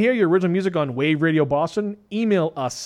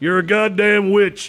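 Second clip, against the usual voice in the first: put-on southern US accent; 4 semitones higher, 4 dB louder than usual. Acting out a witch-accusation bit with the others: southern accent. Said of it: "I like how you did a southern accent".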